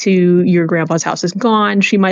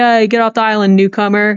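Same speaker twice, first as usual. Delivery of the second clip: mock half-hearted mild yell in old villagers' voices; 3 semitones higher than usual. Voicing old islanders who want the newcomer off the island: old people yelling. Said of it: "some old people yell at you and they're like".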